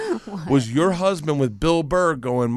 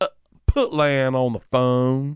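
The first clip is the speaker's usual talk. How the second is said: imitated southern accent. Retelling what the wife's mom said on the phone: imitating a southern accent. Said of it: "my wife's mom's accent".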